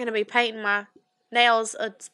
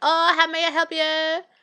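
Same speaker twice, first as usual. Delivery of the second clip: pitched-up, hesitant delivery; 6 semitones higher than usual. Retelling walking into a nail salon, imitating a nail salon worker. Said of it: "That was pretty good".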